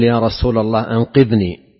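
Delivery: ordinary talk, nothing marked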